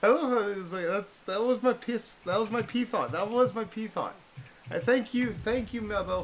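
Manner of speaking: high, loud, excited laughing.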